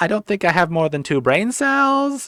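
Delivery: put-on high, swooping valley-girl voice, rising at the end. Speaker mocks how a woman talks, mocking California-girl uptalk. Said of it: "Everything's got an inflection, like it's a question".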